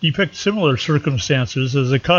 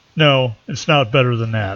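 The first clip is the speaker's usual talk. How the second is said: mock deadpan delivery, flat and dry; 2 semitones lower than usual. Quoting what their brother would reply, imitating brother's deadpan. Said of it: "would say with a deadpan expression".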